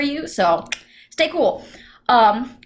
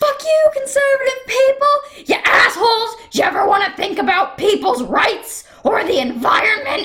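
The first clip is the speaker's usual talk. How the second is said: mock very high, uncontrolled, furious yelling; 11 semitones higher than usual. Recounting suddenly screaming during yoga, retelling a scream. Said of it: "So all of a sudden I'm screaming like".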